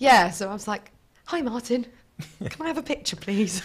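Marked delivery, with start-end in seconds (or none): 1.2-3.6 put-on odd, strongly English accent, quiet. Retelling asking a man for a picture, weird Oliver Twist accent. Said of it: "really English Oliver Twist accent".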